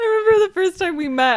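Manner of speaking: high, loud laughter, choked up, through tears.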